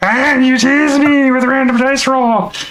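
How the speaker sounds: very high-pitched kobold creature voice. Trying out a voice during a dice game: Desmond kobold voice. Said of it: "doing the Kobold vo- voice for Desmond".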